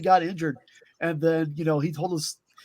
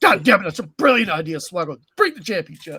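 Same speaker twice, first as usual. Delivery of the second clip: loud, terrible, badly belted voice; 6 dB louder than usual. Retelling a backstage story, doing a terrible Vince McMahon impression. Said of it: "my terrible Vince McMahon impression".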